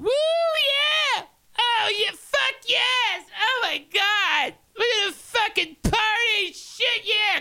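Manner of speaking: wild, very high whooping party voice. Telling a story after a listener praises the voice, doing Diana party voice. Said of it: "I love the Diana party voice you do".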